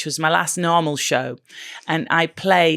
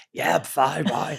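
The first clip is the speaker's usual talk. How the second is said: put-on throaty voice; 4 dB quieter than usual. Retelling answering a new boss after a breakfast show: imitating own Tommy Cooper voice. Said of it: "So like Tommy Cooper".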